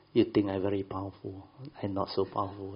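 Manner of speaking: ordinary delivery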